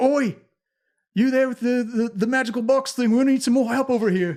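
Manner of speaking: loud, high character voice, calling out. Voicing Durnan calling a player with a magical box for help: Durnan voice. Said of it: "looks around at you and is like".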